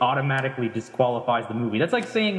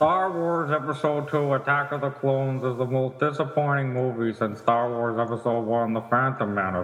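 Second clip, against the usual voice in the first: put-on cartoon villain voice. Speaking to the other speakers in a Plankton impersonation. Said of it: "You actually do a pretty good Plankton impersonation".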